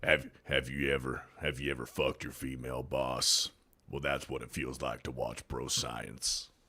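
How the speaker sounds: very deep, hushed advertisement narrator voice. Doing a parody truck commercial line in a Sam Elliott voice. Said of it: "I can do the Sam Elliott voice".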